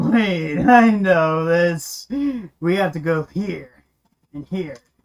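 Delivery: slow, unhurried, deliberate delivery. Voicing Rogar, who has figured out the maze: impression of Faceless. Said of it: "Is that a good impression of Faceless?".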